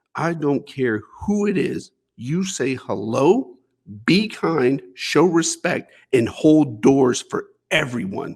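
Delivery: controlled, mean, calm, menacing tone. Retelling what his dad said inches from his face, imitating a mean, calm voice. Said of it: "in this mean, calm voice".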